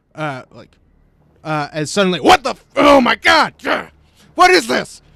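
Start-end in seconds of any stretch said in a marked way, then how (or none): 2.2-5.0 very loud, very high, rough shouting commander voice. Voicing a commander who is being zapped: loud commander voice. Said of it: "you hear this, uh, commander saying".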